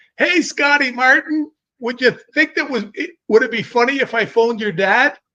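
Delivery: put-on hollering. Telling a story, acting out a man yelling at a kid on the street: retelling a yell. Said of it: "And I hear Bob yell".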